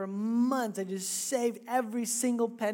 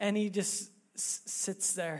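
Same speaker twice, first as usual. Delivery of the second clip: ordinary delivery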